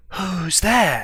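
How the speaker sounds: hushed whisper. A game master voices someone behind a door answering a knock, whispering. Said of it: "a voice whispers to you".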